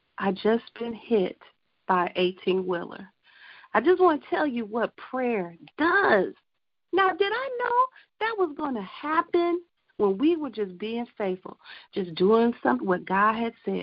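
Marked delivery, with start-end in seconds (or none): none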